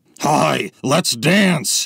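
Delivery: put-on gremlin-like creature voice. In a prank video clip, a creator speaks in a gremlin-like voice. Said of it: "why does he sound like a gremlin?".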